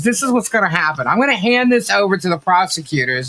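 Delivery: normal talking voice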